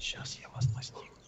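soft, breathy whisper under the breath. Playing the maniac in a game, threatening the other four players, whispering. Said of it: "А почему ты говоришь это шепотом?".

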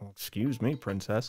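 mock muttering under breath. Imagining a scene with sourness between him and the princess: acting out a mutter under breath. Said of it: "under his breath, he's like".

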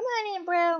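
high-pitched character voice. Voicing a Sim inviting another Sim inside: high-pitched character voice. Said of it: "I get high pitched when I voice them".

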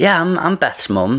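acted proud voice. Retelling a teacher's question to the speaker's mum: imitating proud mum. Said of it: "my mum really proudly is like".

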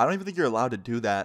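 ordinary talk

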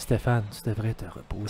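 put-on, mock-sexy, sultry female voice. Joking about a game console telling Stéphane to rest, put-on sultry female voice. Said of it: "Avec une voix de madame sexy".

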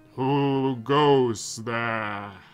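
put-on fantasy dragon voice. Voicing a dragon in the story, the speaker uses a dragon voice. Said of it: "a dragon voice?".

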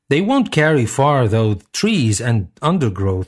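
usual speaking voice

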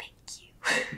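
thrilled, excited, breathy whisper. Playing an excited character thanking another: excited, wide-eyed thanks. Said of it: "the biggest eyes and just be like".

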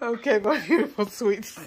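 giggling, laughing through the words. Addressing viewers before showing a Dollar Tree haul, laughing while talking. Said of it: "Sorry for laughing".

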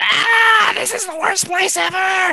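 very high, loud, desperate distressed yell. The game master voices a creature calling up from below to the players, shouting. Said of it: "You hear it shout".

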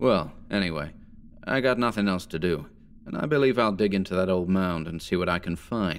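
usual speaking voice

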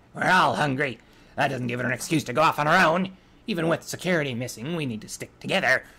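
loud, growling voice through the whole line. Narrator reads the first stallion speaking to the others, growling. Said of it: "The first stallion growled".

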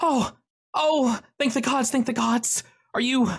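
very high, breathless, frantic panicked outburst. A narrator voices a woman bursting out of the woods, panicked. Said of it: "looking incredibly panicked".

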